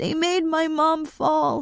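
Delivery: small, high, shaky, trembling, frightened voice. Reading a story aloud, a frightened child speaks into a phone: shaky, scared voice. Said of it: "his voice shaky and scared".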